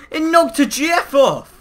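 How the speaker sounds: furious outburst, shrill, very high and very loud. Speaker reacts as something gets knocked off: angry. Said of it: "You sounded so angry about that".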